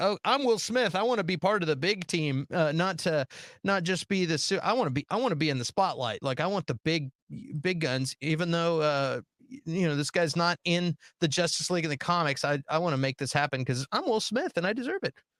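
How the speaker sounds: ordinary talk, nothing marked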